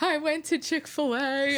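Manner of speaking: put-on crying voice. Retelling answering the dean at the front door: imitating own crying. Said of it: "I'm, like, crying".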